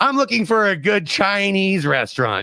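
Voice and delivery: rough put-on impression voice. Imitating Poorman asking listeners for a good Chinese restaurant: Poorman impression. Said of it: "this is my poor man impression".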